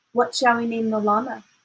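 plain reading voice

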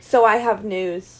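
flat, one-note, level monotone delivery. Speaker retells Jesse announcing news, imitating Jesse's monotone. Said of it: "in the one tone of voice that he seems to possess".

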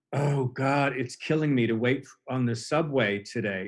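ordinary delivery

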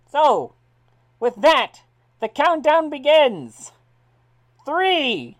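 very loud, very high race announcer voice. Announcing the race around the ring, in a race announcer voice. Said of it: "you hear the sounds of the announcer saying".

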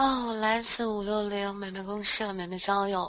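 weak, listless voice. Asked for a self-introduction, the speaker answers in a weak, listless voice. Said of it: "你别这么有气无力的".

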